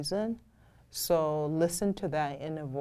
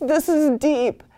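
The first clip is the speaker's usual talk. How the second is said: mock crying while talking, higher and louder; 11 semitones higher, 13 dB louder than usual. Retelling listening to music while working: imitating own crying. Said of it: "I'm over there crying like".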